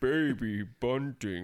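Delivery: put-on deep, robotic baby voice. Imitating the weird robot baby from the movie: deep robot-baby voice. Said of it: "And that has a deep voice. ... that's what he sounds like".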